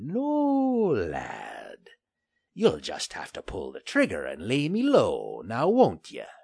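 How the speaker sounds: snarling through gritted teeth. Refusing to drop his sword at gunpoint; snarling through gritted teeth. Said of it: "Finley grit his teeth in a snarl".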